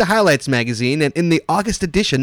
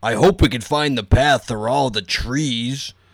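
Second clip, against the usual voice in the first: low-pitched, slow put-on dad voice. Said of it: "I'll be the dad".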